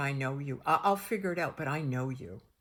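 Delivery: play-acted eerie, ominous, spooky, unsettling tone. Retelling own words that scared a doctor: imitating own scary delivery. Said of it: "and I said it like that".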